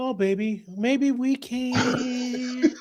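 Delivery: very high, slow, drawn-out syrupy sweet coddling tone. Imitating a woman sweet-talking a man with a fragile ego: imitating sweet-talking a fragile man. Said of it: "I gotta talk to you like".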